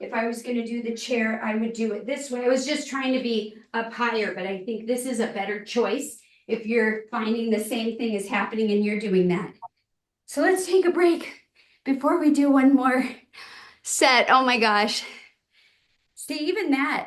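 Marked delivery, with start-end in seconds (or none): 10.3-17.1 winded, puffing between words. Leading an exercise video, calling a break before one more set, winded. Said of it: "I'm like winded".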